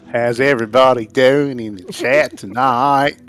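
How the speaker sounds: badly done put-on Australian accent. Greeting everybody in the chat; bad Australian accent. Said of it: "Aussie edition".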